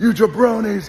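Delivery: very high, loud wrestling promo shout.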